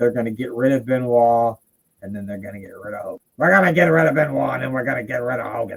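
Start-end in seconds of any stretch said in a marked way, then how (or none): 3.4-5.8 poor Boston accent attempt. Quoting Kevin Sullivan's plan; bad Kevin Sullivan Boston accent. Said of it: "that wasn't a very good Boston accent".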